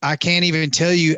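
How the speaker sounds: ordinary delivery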